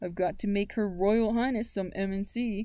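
ordinary delivery

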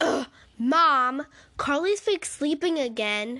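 very loud, irritated, angry shout. Narrator reading the speaker's own line calling to mom, yelling angrily. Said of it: "I yelled angrily while munching on my crackers".

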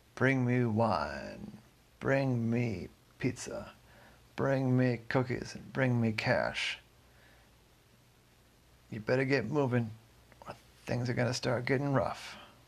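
big resounding voice, "wine" drawn out. Retelling a man on the rooftops calling out his demands: booming voice. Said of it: "started calling out in this booming voice".

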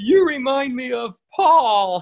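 put-on very high, drawn-out, weepy sobbing voice. Retelling a cartoon scene, Hazel answers Bugs, in Hazel's crying voice. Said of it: "like in a crying voice".

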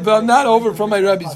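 ordinary talk, nothing marked

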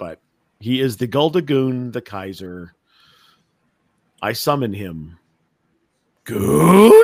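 unsure, tentative call. A podcast host summons the man the show is named after: hesitant. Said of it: "you sounded very hesitant about summoning me there".

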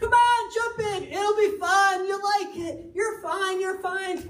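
high, bright, cheerful, encouraging coaxing voice. Acting out a parent talking to a kid frozen at the edge, imitating a cheerful parent. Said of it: "the cheerful tone".

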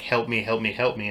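ordinary talk, nothing marked

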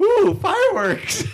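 put-on very high, dotty, batty old woman's voice. Retelling a movie scene, quoting the old lady: imitating a batty old lady. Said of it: "the old batty old lady's like".

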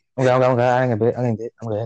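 usual speaking voice

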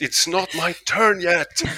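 very high, high-pitched shouting yell. Telling of waiting in his car for his turn, retelling his own shout. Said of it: "I start shouting like".

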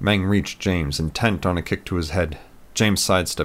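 ordinary delivery, nothing marked

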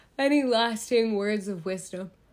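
yawning while speaking. Wrapping up, the host asks the guest for parting words, yawning. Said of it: "Oh, I'm yawning".

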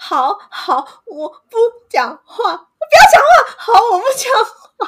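very high, very slow, tearful, sobbing wail. Retelling how, as a child, she answered her scolding father: imitating own childhood crying. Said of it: "然后我就一边哭".

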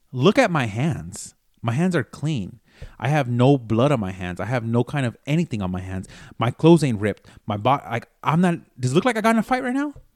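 ordinary delivery

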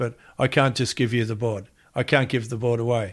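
ordinary talk, nothing marked

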